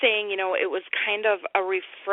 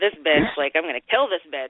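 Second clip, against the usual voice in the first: put-on exasperated killer voice, much lower pitch; 3 semitones lower than usual. Describing a movie scene, acting out the killer, imitating an annoyed killer. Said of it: "he's becoming really annoyed with these ladies".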